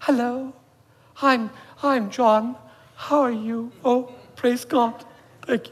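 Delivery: mild, soft-spoken, very gentle, slow voice. Speaker imitates humble Christians greeting him, imitating very gentle talk. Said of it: "they talked very gently".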